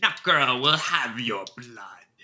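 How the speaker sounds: put-on crone's voice cackling through the words. Voicing a witch taunting a player who is testing a fireball: cackling witch voice. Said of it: "The witch cackles at you".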